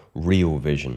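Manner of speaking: heavy stress on "real vision". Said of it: "I really need to stress that word".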